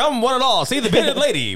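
put-on carnival barker calling voice. Showing how they could be a good carnival barker: carnival barker call. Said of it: "I feel like I could be good at it".

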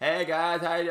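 very loud shout. Retelling how a greeting comes out when trying to be quiet: imitating own yelling.

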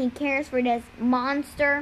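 plain

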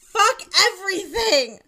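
very high, very loud, shrill screaming shriek. Crying with a razor blade in hand, the narrator screams while cutting into their arm. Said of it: "I screamed as I pierced into my arm".

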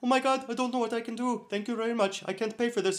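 put-on very high Indian accent. Retelling what a woman said on meeting them, the speaker does an Apu-style accent. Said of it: "they talked like apu from the simpsons".

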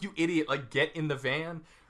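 normal talking voice

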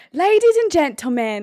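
put-on British accent. Trying out an introduction after asking how to yell it, british accent. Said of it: "You'll get a 9.5 if you do British".

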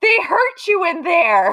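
put-on loud, high, wailing yell of crying child. Retelling a crying child's words to a waiting room: imitating a child screaming. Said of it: "looked at the other kids in the waiting room and screamed".

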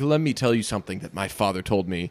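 weighty, low, hushed delivery full of wisdom. Speaker imitates how a man said a line that friends quote, with mock wisdom. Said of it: "there was a lot of wisdom behind it".

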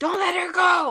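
very high shriek at full volume. Retelling a struggle over a dog, re-enacting own screaming from the other side. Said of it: "screaming like".

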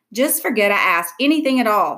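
usual speaking voice

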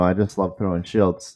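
dripping, over-the-top sarcasm, acted out. Retelling what was said each time rolling dice: imitating own sarcastic remark. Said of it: "I was saying that with ultimate sarcasm".

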